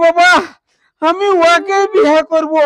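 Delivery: plain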